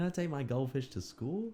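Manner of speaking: bad fake American accent. Acting out a short scene with a co-speaker, the child's line in a trash american accent. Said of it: "Trash American accents".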